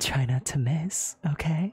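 hushed whisper. While Orm's back is turned, she leans down to your ear; whispering. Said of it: "whispering in your ear".

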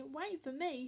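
ordinary delivery, nothing marked

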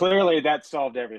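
heavy, dripping sarcasm. Mocking a team's roster decision to a co-host, sarcastic. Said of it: "a bit of sarcasm for those listening".

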